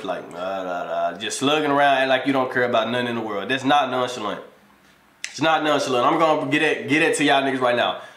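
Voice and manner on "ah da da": low, soft, fake deep voice. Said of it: "you just laying with a deep voice".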